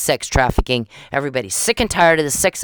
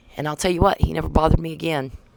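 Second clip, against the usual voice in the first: usual speaking voice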